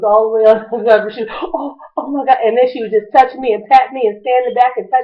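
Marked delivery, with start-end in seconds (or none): 1.3-2.4 play-acted shocked, scared, slow frightened gasp. Retelling a woman's reaction after she punched the speaker: imitating a scared woman. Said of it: "She was so scared".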